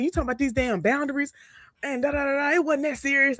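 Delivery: mock yell. Retelling a phone call where he started going off: imitating someone yelling. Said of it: "he was yelling".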